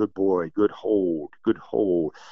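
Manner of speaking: gentle, calm, soothing, settling voice. Demonstrating how to praise a dog while it holds something: calm, soothing voice. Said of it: "You want a calm, soothing voice".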